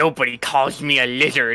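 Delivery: slow, menacing, intimidating character voice. Voicing a character towering over a shorter foe: menacing in-character voice. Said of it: "this fucking voice".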